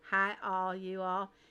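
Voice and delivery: slight Southern accent. Putting a southern accent on a greeting, little southern accent. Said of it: "A little southern accent there".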